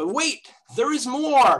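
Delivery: high infomercial announcer voice. Explaining an elliptic curve result, the speaker adds more, in an infomercial voice. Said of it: "let me use my best infomercial voice".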